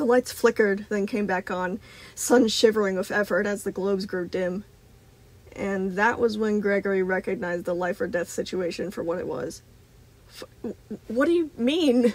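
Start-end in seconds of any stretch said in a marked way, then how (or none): 11.1-12.1 high, sputtering, words tumbling out. Gregory, struggling to keep up with the animatronic's terror, steps back, spluttering. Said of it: "Gregory spluttered".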